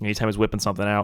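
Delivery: ordinary delivery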